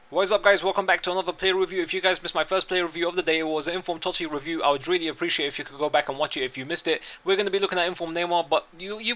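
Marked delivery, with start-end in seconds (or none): 0.7-8.5 very fast, rapid-fire, rushed, rattled-off talking. A video host opens a player review for viewers, talking very fast. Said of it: "why I'm talking this fast".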